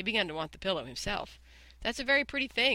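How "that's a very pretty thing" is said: light, pitched-up, offhand, eagerness held back. Admiring a pillow he wants for himself, he speaks while hiding his eagerness. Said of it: "trying to hide his eagerness".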